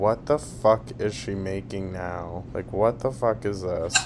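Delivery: ordinary delivery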